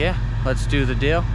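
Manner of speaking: ordinary talk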